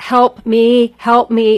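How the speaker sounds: desperate, panicked, drawn-out cry. Retelling screaming on a mountain ride, the speaker acts out a panicked scream. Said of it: "I was screaming like for my life".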